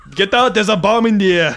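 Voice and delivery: put-on Austrian accent. Doing a quick accent bit: Arnold Schwarzenegger accent. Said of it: "But it's an Arnold Schwarzenegger".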